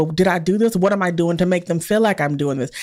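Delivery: ordinary delivery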